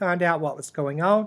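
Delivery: ordinary delivery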